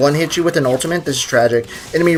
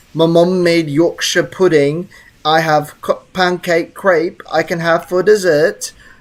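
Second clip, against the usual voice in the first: faked, put-on British accent; 2 semitones higher than usual. Reading a viewer's chat message aloud in a put-on british accent. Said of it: "I'm gonna say it, like, British-like".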